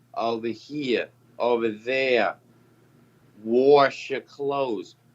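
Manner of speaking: exaggerated Boston accent, r added in wash, "warsh". Describing how Tony talks, imitating Tony's Boston accent. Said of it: "There ain't no fucking R in wash".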